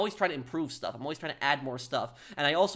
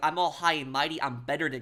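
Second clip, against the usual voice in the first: mock high and mighty, superior tone. Mocking the way she is talking: imitating a high and mighty tone. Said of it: "The way she's talking, she's like".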